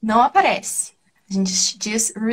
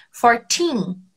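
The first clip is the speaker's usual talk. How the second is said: put-on fourteen with strong stress on second syllable teen. English number lesson given in Portuguese, stress on teen in fourteen. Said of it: "é esse teen que tem que ser stressed. É ele que é a sílaba mais forte".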